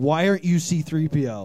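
put-on, mock angry tone. Retelling a meeting with CM Punk at a photo op: imitating CM Punk's angry question. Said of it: "looked at me very angry and said".

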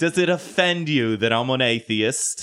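put-on stand-up comedian voice, needling, teasing tone. Joking about atheists online, doing a Ricky Gervais impression. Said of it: "that's a good fucking Ricky".

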